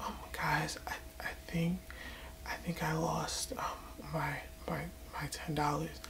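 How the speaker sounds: tiny, breathy, hushed little whisper. Retelling how a friend spoke after losing money: imitating a timid whisper. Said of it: "with the little dumbass whisper voice again".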